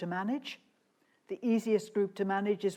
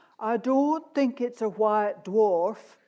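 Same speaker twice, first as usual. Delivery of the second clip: slow, raised, put-on Yorkshire accent; 2 semitones higher, 6 dB louder than usual. Recounting what Fred said when he spoke first, in Fred's Yorkshire accent. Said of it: "I'll try and do his Yorkshire accent".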